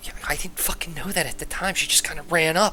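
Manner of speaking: hushed, very quiet whisper. Storyteller voicing one of the guys who whispers in his ear, whispering. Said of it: "One of the guys whispers in his ear".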